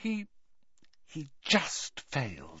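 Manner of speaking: hushed whisper, barely voiced, very quiet. A narrator reads a student answering a friend as a classmate comes in, whispered. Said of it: "whispered Hermione".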